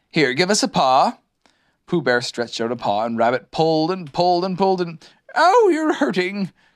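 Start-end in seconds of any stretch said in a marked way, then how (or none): 5.3-6.4 very high-pitched cry of pain. While Rabbit pulls him out by the paw, the stuck bear calls out; crying out in pain. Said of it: "cried Pooh".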